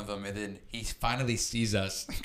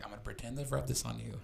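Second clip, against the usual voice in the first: put-on whisper, quieter; 7 dB quieter than usual. Retelling how a friend whispered a prank plan: imitating someone whispering. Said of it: "whispers in my ear".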